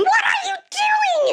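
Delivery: play-acted very high, loud shrieking. Retelling salt water being poured on her wound: imitating her own scream. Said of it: "and I scream".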